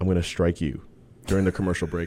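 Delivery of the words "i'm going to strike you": put-on muttering, lower and quieter. Retelling a remark heard during a match: imitating Renee muttering under her breath. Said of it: "you hear under her breath".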